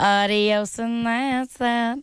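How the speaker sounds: mean-sounding Southern drawl.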